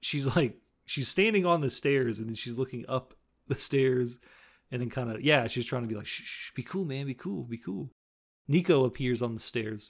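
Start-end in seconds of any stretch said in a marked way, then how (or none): 6.1-7.9 soft, hushed, urgent shushing tone. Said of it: "Try to shush her".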